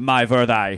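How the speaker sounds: unconvincing, put-on German accent. Radio host showing how to say a band's name, in a German accent. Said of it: "with a German accent".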